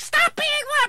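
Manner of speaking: high-pitched, loud shout. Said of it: "Slapping it around a bin shouting".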